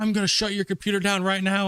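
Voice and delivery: acted, high-pitched screaming. Retelling a phone call, imitating the guy who screamed at him: imitating someone screaming. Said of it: "He was just screaming at me".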